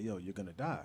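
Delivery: low voice. Retelling a warning given after a broken collarbone: imitating a lowered voice. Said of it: "his voice got low".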